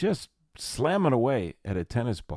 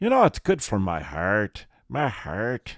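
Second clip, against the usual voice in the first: put-on Irish brogue accent; 4 dB louder than usual. Joking about the Irish pub near home: put-on Irish accent. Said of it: "that's my Irish accent".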